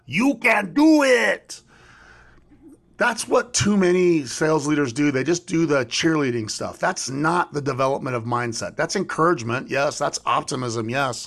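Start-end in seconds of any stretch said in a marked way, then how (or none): 0.1-1.6 very high, very drawn-out, stretched cheering scream. Retelling a movie scene outside a hospital with a crowd: imitating Rob Schneider screaming. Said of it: "he's screaming".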